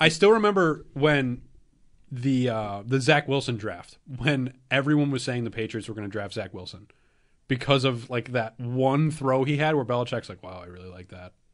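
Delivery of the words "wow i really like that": very quiet, low, hushed, level flat monotone. Recalling the Zach Wilson draft, doing a Belichick monotone impression. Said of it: "in that really monotone level".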